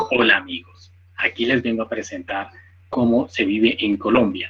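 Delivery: almost machine-like, robotic text-to-speech narration. Imitating a YouTube tutorial voice for listeners: imitating Jorge robotic voice. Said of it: "así habla, casi una voz como robótica".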